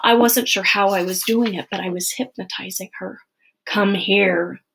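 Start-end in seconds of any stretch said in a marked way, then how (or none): 3.7-4.5 growling, voice deeper than normal. The narrator, hypnotizing Annie, calls her over, growled, deeper than normal. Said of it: "I growled, my voice deeper than normal".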